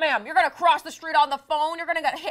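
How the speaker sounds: very loud, high, shrill cop-style yelling. Retelling what a cop said while yelling at them: imitating a cop yelling. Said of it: "the cop screamed at me".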